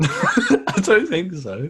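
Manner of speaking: disbelieving laugh, slow, high.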